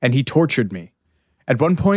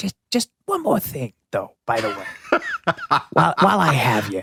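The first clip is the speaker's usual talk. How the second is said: put-on raspy, swooping, heavy New York accent and vowels. Imitating an actress who plays Columbo: Natasha Lyonne doing Columbo. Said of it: "I'm doing Natasha Lyonne".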